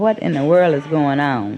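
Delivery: plain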